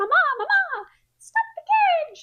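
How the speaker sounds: put-on shrill, very high, loud little child voice crying out. Retelling a plot scene, a child calls from a carriage: imitating a child calling out. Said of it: "he hears a voice that's like".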